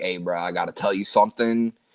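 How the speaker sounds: put-on whisper. Retelling what one person said to another: imitating a whisper. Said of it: "he's, like, whispering to him".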